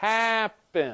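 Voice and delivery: "happen" with stress on first syllable "hap". Choosing which version of a word sounds better: stress on "hap" in happen. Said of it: "the stress is on the first syllable".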